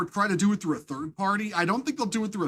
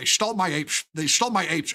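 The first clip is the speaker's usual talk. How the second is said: put-on sci-fi space-alien voice; 3 semitones lower than usual. Speaker tries out his best Quark from Star Trek impersonation. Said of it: "my best Quark Quark from Star Trek impersonation".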